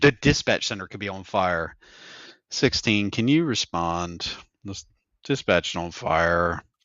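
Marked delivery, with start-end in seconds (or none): 2.5-6.6 low, slow, flat, even monotone drone. Recalling Wayne dispatching, imitating Wayne's monotone. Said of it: "Wayne who was just monotone the entire time".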